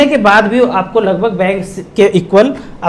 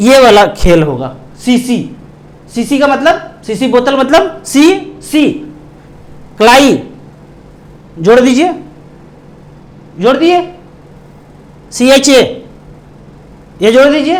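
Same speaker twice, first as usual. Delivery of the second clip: slow, halting, broken-up, word-by-word delivery. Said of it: "धीरे धीरे बोलूँगा, कम बोलूँगा ... तोड़ तोड़ के बोलूँगा".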